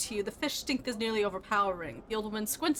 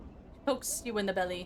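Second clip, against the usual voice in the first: usual speaking voice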